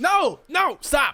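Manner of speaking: put-on angry, fed-up, high-pitched New York accent. Voicing the stressed burgomaster telling the bagpiper to stop: angry New Yorker voice. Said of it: "how else does a New Yorker sound when they're mad?".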